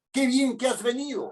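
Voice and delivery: happy, glad, welcoming intonation with lifted tone. Example of showing joy through intonation when telling someone something: joyful tone. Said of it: "manifiesto mi alegría a través de la entonación".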